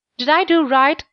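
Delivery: worried, uncertain, anxious tone. Katy asking her father after telling him her story, asking anxiously. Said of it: "she asked anxiously".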